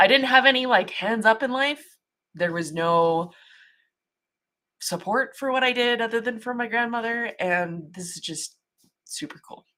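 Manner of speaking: talking through tears. Speaking on screen about having had no support but a grandmother, crying while talking. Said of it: "I'm like crying like a baby now".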